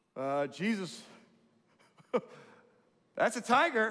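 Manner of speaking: high, loud, nervous laughing alarm.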